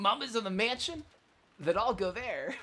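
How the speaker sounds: high-pitched, loud, cartoony voice. Voicing the character Maria while reading aloud: Sonic the Hedgehog voice. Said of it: "I give her, like, a Sonic the Hedgehog voice".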